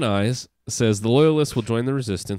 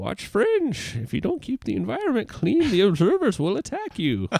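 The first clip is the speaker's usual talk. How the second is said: put-on high-pitched, sing-song elderly man's voice; 11 semitones higher than usual. Speaker imagines addressing his kids twenty years from now: old man voice. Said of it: "Was that your old man voice?".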